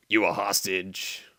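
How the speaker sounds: put-on gruff soldier voice. Voicing the hero's reply to a prisoner in the game, in Snake voice. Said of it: "there goes my snake voice again".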